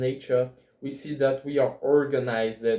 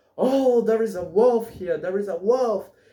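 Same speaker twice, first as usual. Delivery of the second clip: high, urgent shouted alarm cry; 8 semitones higher, 3 dB louder than usual. Retelling the story of the shepherd and the wolf, act out the shepherd's scream. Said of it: "starts to scream".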